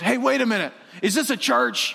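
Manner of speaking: mock angry, suspicious and indignant, high pitch. Retelling how an angry driver at a gas pump yelled: imitating a man yelling. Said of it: "he yells out at one of our volunteers".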